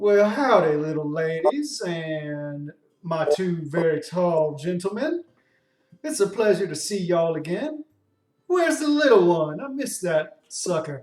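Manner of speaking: folksy southern drawl, words drawn out. A game master voices the cart-rental person greeting the party, in a southern drawl. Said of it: "you suddenly hear the drawl come in".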